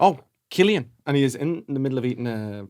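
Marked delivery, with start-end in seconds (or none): 0.0-0.9 put-on Liverpool Scouse accent, pitched up, called out. Retelling a man greeting him in town about the podcast: Scouse accent. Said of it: "this beautiful Scouse accent going".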